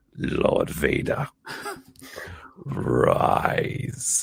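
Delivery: creepy, dark sinister villain voice. Showing a favourite voice to do: Emperor Palpatine voice. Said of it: "Emperor Palpatine".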